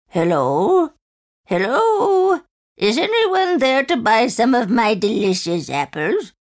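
put-on raspy, aged old woman voice, sing-song. Narrator reads a disguised woman calling at the cottage, raspy old voice. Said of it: "She dressed up as an old beggar woman and headed to the forest with a basket full of poisoned apples. ... In a raspy old voice".

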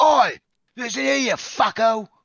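bad Cockney accent, very high-pitched and very loud. Planning an intro, then switching into a horrible cockney accent. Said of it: "it's gonna be a horrible Cockney accent".

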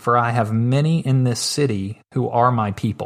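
ordinary talk

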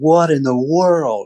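mock stunned shout, high-pitched and stretched out. Retelling seeing trail camera pictures of a huge buck: retelling a scream. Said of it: "I remember screaming, like, shouting in my house".

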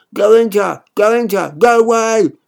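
shouting. A boy answers a mother who thundered at him; yelling back. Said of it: "I yelled back".

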